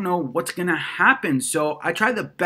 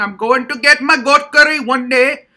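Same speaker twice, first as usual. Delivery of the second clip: very loud, high, put-on Indian accent; 7 semitones higher, 9 dB louder than usual. Listing the voices the speaker does, putting on an Indian accent. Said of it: "like an Indian man just talking".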